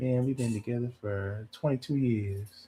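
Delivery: put-on quiet, laid-back man voice. Imitating a real chill man who never raises his voice: imitating a quiet, chill man. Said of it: "They don't talk very loud".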